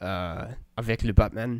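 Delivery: put-on French accent. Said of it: "say names with a French accent".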